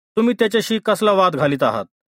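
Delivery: plain reading voice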